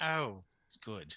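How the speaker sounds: hushed whisper. Voicing a character whispering to mushrooms: whispering. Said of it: "whispering to the mushrooms".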